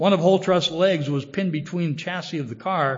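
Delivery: ordinary delivery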